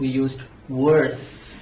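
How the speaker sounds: worse stretched out slowly and flat.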